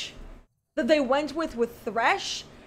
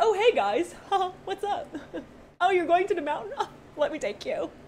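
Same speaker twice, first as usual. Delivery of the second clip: eager, chummy, breezy, overly friendly gushing tone; 4 semitones higher than usual. Retelling how Diana greets the group heading to the mountain: imitating Diana. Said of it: "they meet her and she's like".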